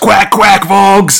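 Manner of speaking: mock yelled line, high-pitched shout. Retelling a comic scene where a character shoots and shouts: retelling a shout. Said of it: "just shouts".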